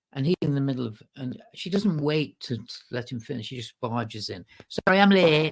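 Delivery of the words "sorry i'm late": put-on thick Manchester accent, loud and high. Retelling a woman barging in late, interrupting a man mid-sentence: thick Manchester accent. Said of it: "thick Manchester accent".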